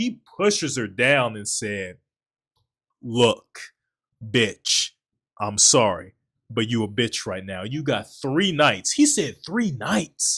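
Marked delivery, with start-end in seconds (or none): 3.0-8.9 acted-out, mock-angry man's voice. Speaker retells a story about a man who gets mad, retelling an angry man. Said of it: "He gets so mad".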